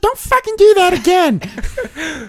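very high, squeaky little puppet voice. During banter about impressions, one speaker talks in an Elmo impression. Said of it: "Elmo says".

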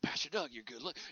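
soft, hushed half-whisper, cut off. Imagining a pastor who wants to bless him: imitating someone half-whispering. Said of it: "he's whispering".

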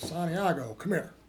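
put-on big old country accent. Retelling how the head scout called him over, in a big old country accent. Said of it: "with a big old country accent".

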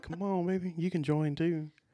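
words under the breath. Imagining a boyfriend half-whispering to the twins: imitating someone half-whispering. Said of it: "I bet he's whispering".

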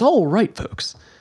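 on-air radio announcer broadcast delivery. Podcast host greeting the folks in a radio announcer voice. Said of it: "Listen to that like radio voice".

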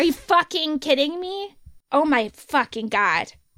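seething, raging fury boiling over. Reacting to hearing a publisher refused a piece as too inflammatory, with rage. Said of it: "I can hear the fucking rage in your voice".

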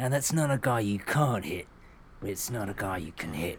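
put-on London Cockney accent. Quoting an actor's famous film line: imitating a british cockney actor. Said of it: "he has the famous line where it's like".

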